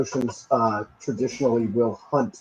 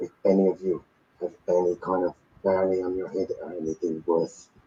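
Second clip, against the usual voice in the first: hushed, low, half-whispered aside; 6 semitones lower, 5 dB quieter than usual. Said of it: "I'm just gonna whisper out to the group".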